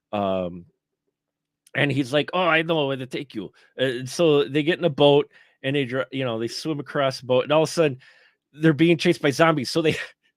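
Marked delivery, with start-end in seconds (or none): 2.3-3.5 put-on Spanish-accented English, lower pitch.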